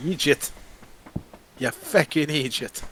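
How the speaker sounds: accent drifting into Irish. Trying out a scottish accent with a co-host, accent drifting into irish. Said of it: "That's Irish now".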